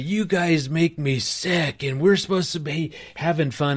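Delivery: put-on exasperated yelling outburst, bursting out, pitched high. Retelling losing it at family camp, retelling yelling at the family. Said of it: "I started yelling at the family".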